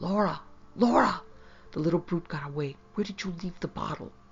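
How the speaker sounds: harsh, rough whisper. He opens his door and calls to Laura, harsh whisper. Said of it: "exclaimed in a harsh whisper".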